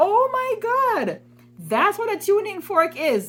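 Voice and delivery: high, slow, drawn-out amazed exclamation.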